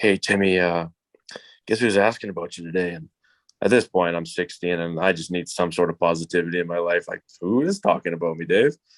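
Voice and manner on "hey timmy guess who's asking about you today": put-on raspy man's voice. Retelling what Dave said to him after practice, doing a raspy Dave impression. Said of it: "he has a raspy voice".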